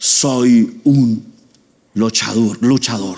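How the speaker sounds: deep voice of a weakling acting like a wrestler.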